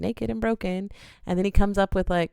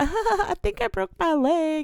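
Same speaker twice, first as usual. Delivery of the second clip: mock drunk, very high, slow, giggly speech; 11 semitones higher than usual. Retelling what they yelled out after a fall while still drunk, retelling giggling while talking. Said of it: "I'm like giggling".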